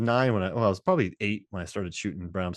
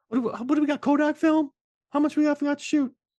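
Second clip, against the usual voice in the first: higher put-on little kid voice, shouting; 3 dB louder than usual. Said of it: "That's his little kid just yelling".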